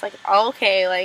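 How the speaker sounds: normal talking voice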